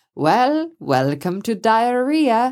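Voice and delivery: clumsy put-on German accent. Retelling what the sailboat owner said in reply, bad German accent. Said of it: "I can't do a good German accent".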